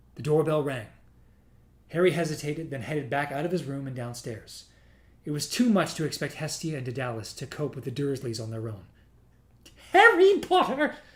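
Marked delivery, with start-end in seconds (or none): 9.9-10.9 shrill, very high, loud, eager excited squeal. Narrator voices a visitor greeting Harry at the door: squeaky excited Daedalus voice. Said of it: "squeaked an excited voice".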